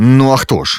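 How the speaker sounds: grumbling voice. A man answers a woman's surprised greeting: grumbling. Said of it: "буркнув Артур".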